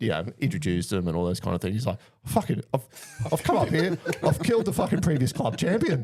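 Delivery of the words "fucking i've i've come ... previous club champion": play-acted frantic, panicked, very high blurt. Retelling a golf mishap, quoting the friend who hit the ball: imitating a panicking friend. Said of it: "T-Mac's fucking freaking out".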